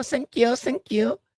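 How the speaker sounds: soft-spoken Hong Kong accent imitation. Imitating mom to show a Hong Kong accent type: soft-spoken Cantonese accent. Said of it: "Very soft spoken".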